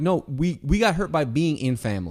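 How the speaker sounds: normal talking voice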